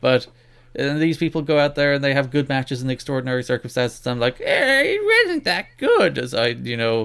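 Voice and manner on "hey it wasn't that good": nerdy voice, way up high, slow, sing-song, dragged out. Podcast host criticizing a wrestling match, nerd voice. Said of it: "put on my nerd voice".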